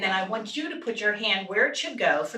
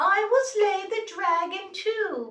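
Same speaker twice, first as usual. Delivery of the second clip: put-on tiny, very high young girl, little princess voice; 11 semitones higher than usual. Telling a fairy tale, voicing the younger princess's line: young princess voice. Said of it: "she's a young voice".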